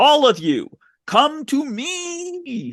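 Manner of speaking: shrill, very high, very slow swooping scream. Retelling a movie scene where Blackheart screams: imitating Blackheart screaming. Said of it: "And then he screams".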